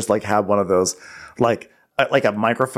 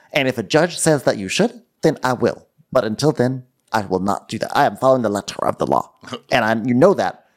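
mock-mad, over-enunciated put-on delivery. Acting out how Erica talks about a judge when she gets really mad, imitating Erica's mad enunciating. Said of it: "starts enunciating like that".

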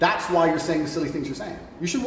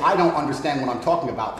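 ordinary delivery

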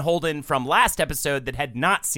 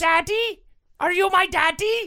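put-on tiny, cute little-baby voice, very high pitched; 3 dB louder than usual. Joking about a deleted scene, the speaker voices the shadow baby: cute shadow-baby voice. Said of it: "the shadow baby had a cute voice".

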